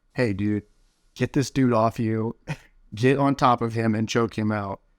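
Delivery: plain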